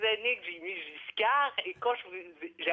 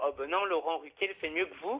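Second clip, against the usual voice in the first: ordinary talk, nothing marked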